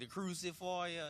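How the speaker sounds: put-on British accent. Retelling how a British dude named the knee: imitating a British accent. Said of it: "it was a British dude that said it".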